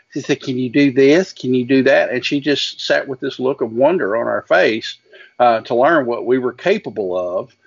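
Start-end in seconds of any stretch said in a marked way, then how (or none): 0.5-2.1 wilting, genteel Southern belle voice. Quoting a woman from their past who asked them what they could do, southern belle voice. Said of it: "She was a true Southern belle".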